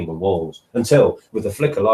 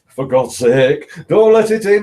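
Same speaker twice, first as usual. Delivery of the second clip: trembling, shaking, very high outcry; 9 semitones higher, 6 dB louder than usual. An old man cries out to the old woman as knocking sounds: trembling cry. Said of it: "cried the old man, trembling".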